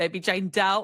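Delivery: put-on super-thick, strongly laid-on Philly accent. Quoting Nurse Dana from The Pit to a listener, Nurse Dana's super Philly accent. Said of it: "it's like a super Philly accent".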